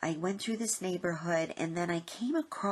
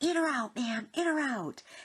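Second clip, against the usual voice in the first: yelling. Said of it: "and then he yelled".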